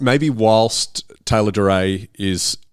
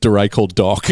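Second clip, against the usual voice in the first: usual speaking voice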